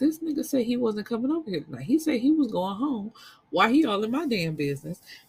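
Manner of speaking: sly, smirking, secretly pleased, amused grumbling. Retelling what a friend said after hanging up: imitating someone smirking. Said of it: "she's smirking 'cause she like".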